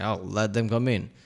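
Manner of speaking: normal talking voice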